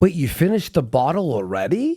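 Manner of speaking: startled, surprised, disbelieving tone. Retelling what the doctor says: imitating a surprised doctor. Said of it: "His doctor's like".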